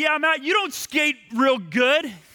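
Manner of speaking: acted, heated, high-pitched shouting. Retelling a hockey quarrel, shouting back: imitating own past shout. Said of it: "I shouted things at him".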